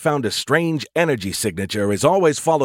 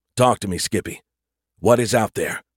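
ordinary delivery, nothing marked

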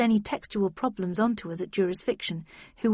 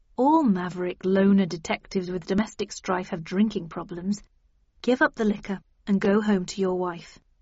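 usual speaking voice

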